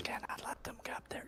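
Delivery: muttering in a whisper. A game master voices a creature mumbling to itself, in a whispery voice. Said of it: "mumbling to itself in a whispery voice".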